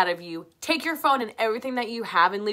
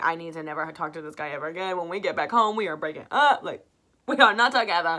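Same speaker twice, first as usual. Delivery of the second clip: acted-out frantic, freaked-out, panicking voice; 3 semitones lower than usual. Retelling own words to a boyfriend while freaking out: imitating own panicked words. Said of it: "I was freaking out".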